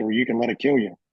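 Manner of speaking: ordinary talk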